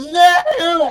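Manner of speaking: screaming in terror. Voicing a cowering man who is touched on the leg: screaming in terror. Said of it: "screaming and cowering at the moment".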